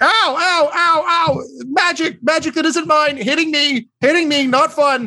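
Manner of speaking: shouting gnome voice. Narrating the game as the gnome takes damage: yelling gnome voice. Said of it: "The gnome starts yelling".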